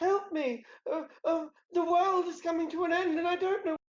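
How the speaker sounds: squeaky, very high-pitched cry. Storyteller voicing a character begging the players for help, high-pitched voice. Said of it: "she says in a in a high pitched voice".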